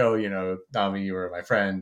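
ordinary talk, nothing marked

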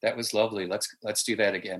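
gentle, coaxing, soft, hushed half-whisper. Retelling how she spoke to the crew on set after a take, half-whispering. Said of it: "she was just whispering".

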